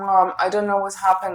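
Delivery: upset, tearful words spoken while crying, pleading. Retelling what was said to Mom while in tears: imitating own crying words. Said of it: "and I was crying, like, literally in tears".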